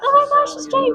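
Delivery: high, excited gasp of recognition.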